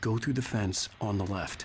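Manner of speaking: ordinary talk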